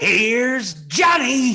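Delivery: slow, loud, gleeful and menacing voice.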